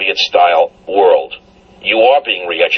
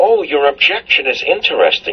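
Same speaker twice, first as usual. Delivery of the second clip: menacing, sinister, pitched-up voice; 5 semitones higher than usual. Retelling what a diversity trainer said to the speaker, imitating a sinister, quiet voice. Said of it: "with a sinister, quiet voice".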